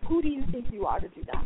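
ordinary talk

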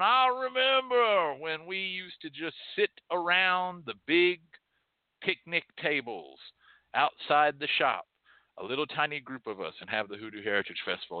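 put-on high, fussy, pedantic, grumbling old curmudgeon voice. Retelling what he said, in a pedantic, aged curmudgeon voice. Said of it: "aged voice of a curmudgeon".

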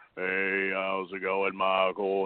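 very low, slow, read-off-a-script delivery. Mocking a commissioner's greeting: imitating Joey Britt reading a script. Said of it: "this sounds like he's reading off a script".

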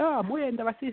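high, called-out delivery.

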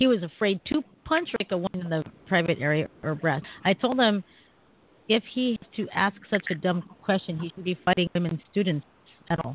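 usual speaking voice

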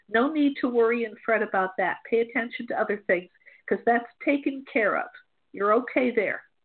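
normal talking voice

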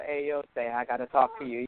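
ominous, low, put-on scary voice. Retelling the voicemail her husband dreads, imitating a scary voice. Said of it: "with his voice, and then it scares the heck out of him".

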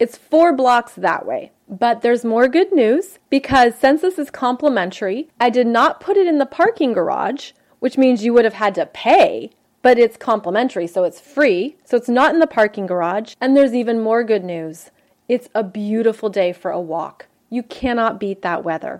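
normal talking voice

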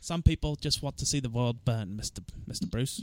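British-accented speech. Quoting a Batman line in Michael Caine mode: Michael Caine impression. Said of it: "Let me try to go into Michael Caine mode here".

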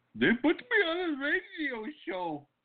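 bad put-on Indian accent, very high. Imitating an international guy who thinks he's on a radio show: put-on Indian accent. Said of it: "impression of an Indian guy".

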